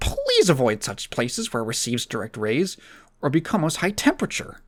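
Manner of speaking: animated reading voice with big, swooping pitch swings. Reading product instructions aloud as an impression: Doug Walker impression. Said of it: "Let me do my Doug Walker reading off this".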